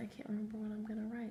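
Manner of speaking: unvoiced, whispered aside to oneself.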